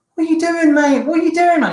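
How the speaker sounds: mock shrill, very high screaming outburst. Retelling a confrontation where someone ran at him, imitating someone screaming. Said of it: "He starts screaming".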